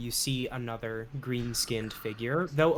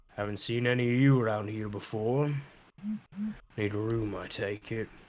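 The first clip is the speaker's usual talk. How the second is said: voice of a massive, hulking, tusked brute creature; 3 semitones lower, 3 dB quieter than usual. Voicing a massive hulking green figure with tusks behind the bar: hulking green tusked figure voice. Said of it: "a massive hulking green figure with tusks".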